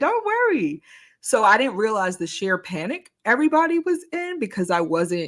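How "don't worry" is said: put-on cheerful, happy tone, higher. Retelling reassuring friends in the back seat: imitating own happy reassurance. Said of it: "I said it, like, happily".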